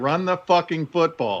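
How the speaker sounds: mock yelling, high-pitched and mild. Longtime Rams fan retelling how he yelled at the TV screen, re-enacting the yell. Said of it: "but I'm yelling at Sean McVay".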